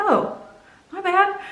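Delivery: sheepish apologetic tone.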